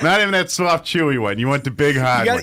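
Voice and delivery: put-on affected Boston accent. Recommending hard candy as a joke: boston accent. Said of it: "suddenly went to Boston".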